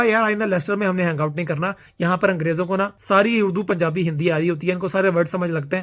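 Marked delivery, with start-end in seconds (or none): none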